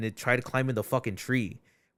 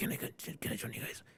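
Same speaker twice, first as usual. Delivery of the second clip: put-on hushed, breathy, raspy old-smoker whisper. Recalling a voice heard while hiking, imitating a raspy old smoker. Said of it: "some fucking old raspy dude like the cigarette shits".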